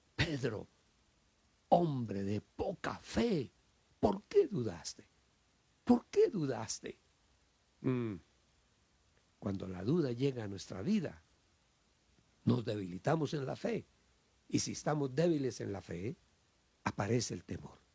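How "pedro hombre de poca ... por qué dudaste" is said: authoritative, commanding voice with swooping pitch. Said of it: "el Señor hablaba con voz de mando, con voz de autoridad".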